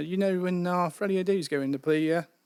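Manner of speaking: put-on British accent. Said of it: "a man with a British accent".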